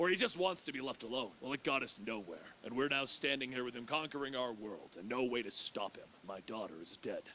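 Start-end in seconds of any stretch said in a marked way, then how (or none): none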